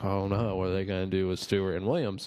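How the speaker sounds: plain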